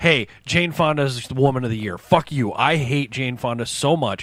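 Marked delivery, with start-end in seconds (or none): none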